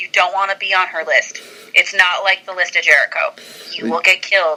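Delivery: ordinary delivery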